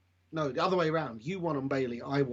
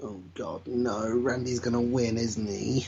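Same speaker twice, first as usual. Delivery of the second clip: ordinary talk, nothing marked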